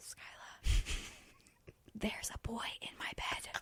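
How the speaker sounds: very quiet, very slow, hushed whisper. Retelling what someone said on walking into her room: imitating someone whispering. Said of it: "like whispering".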